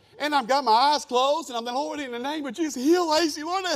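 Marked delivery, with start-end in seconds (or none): 1.8-3.6 put-on, pitched-up, pious spiritual-sounding voice. Retelling praying with eyes closed over someone: imitating own spiritual-sounding prayer. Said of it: "I'm just trying to be spiritual".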